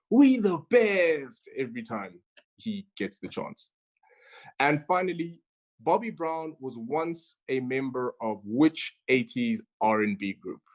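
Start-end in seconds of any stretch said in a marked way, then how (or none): 0.1-1.5 slow, high, loud shout. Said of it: "well known for shouting".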